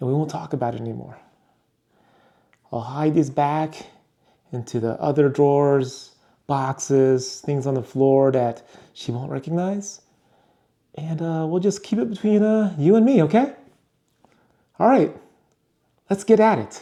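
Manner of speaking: hushed whisper. Hiding purchases from someone at home, whispering to the viewers. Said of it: "I'm not sure why I'm whispering".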